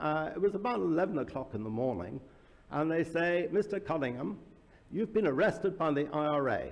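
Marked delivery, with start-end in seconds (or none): none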